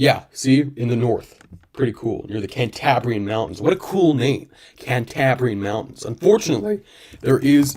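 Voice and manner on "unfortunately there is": voice cracking and breaking mid-phrase. Naming places in Portugal, voice cracking. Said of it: "voice crack".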